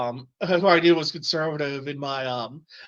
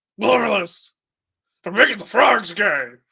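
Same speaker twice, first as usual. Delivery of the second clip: loud, raised, pitched-up ranting delivery; 5 semitones higher, 5 dB louder than usual. Recalling goofing off in class with buddies, the speaker does an Alex Jones impression. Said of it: "We were just doing Alex Jones impressions".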